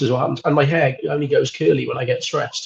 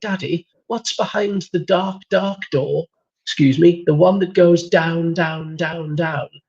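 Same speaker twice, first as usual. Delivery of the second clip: put-on spooky, old-fashioned, haunting ghost child voice; 3 semitones higher than usual. Retelling Fraser's question after waking him in lockdown: Edwardian ghost child voice. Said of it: "Why are you talking like an Edwardian ghost child?".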